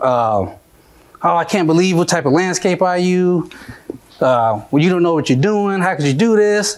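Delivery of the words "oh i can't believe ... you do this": overwrought, hysterical, frantic outburst. Retelling how a woman reacted to her broken car window, imitating a hysterical woman. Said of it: "she comes out acting hysterical".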